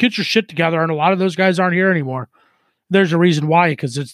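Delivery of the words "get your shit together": ordinary delivery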